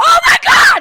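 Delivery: very high, very loud shrieking scream. Retelling how he reacted on recognizing her: imitating Chris screaming. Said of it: "he screams".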